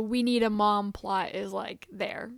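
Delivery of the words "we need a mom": ordinary talk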